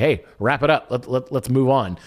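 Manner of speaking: usual speaking voice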